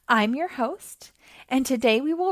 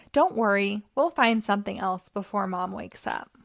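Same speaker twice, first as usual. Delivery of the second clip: usual speaking voice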